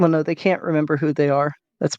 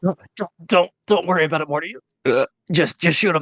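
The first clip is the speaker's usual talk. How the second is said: put-on acted drunk, elderly voice. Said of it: "Morty, run".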